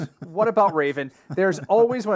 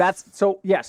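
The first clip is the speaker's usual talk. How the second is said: ordinary talk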